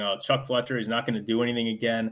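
plain

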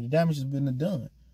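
ordinary delivery

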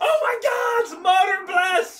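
very high, very loud, alarmed shriek. Narrating a woman spotting them coming down the mountainside, screaming in alarm. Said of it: "She screams".

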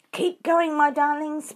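loud, high, breathless, panting words. A fox urging the other foxes on as shovels close in, panting. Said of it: "panted Mr. Fox".

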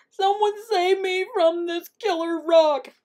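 very high, desperate, pleading howl. Narrator reading the coyote's cry as a rolling rock heads straight for him, howling. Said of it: "He howled".

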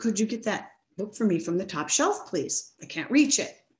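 sweet, courteous, polite voice. Teacher retelling how a student asked for something, imitating a student's polite voice. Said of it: "she asks me in her polite voice".

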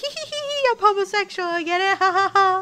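giggly, tipsy, high laughing voice. Retelling how he giggles when drunk, imitating his giggle. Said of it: "I just giggle like".

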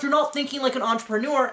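plain

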